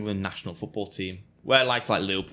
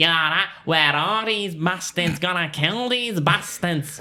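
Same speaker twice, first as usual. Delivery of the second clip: put-on very high, loud, nasal, overdone Manchester accent; 10 semitones higher, 6 dB louder than usual. Imitating football fans in a film, exaggerated Manchester accent. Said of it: "you should hear the Manchester accent on the United fans".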